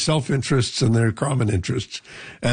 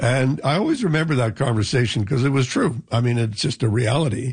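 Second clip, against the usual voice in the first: normal talking voice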